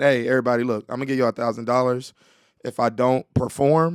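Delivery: ordinary talk, nothing marked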